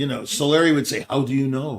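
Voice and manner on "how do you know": put-on soft Italian-accented voice. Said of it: "that's in his Italian accent".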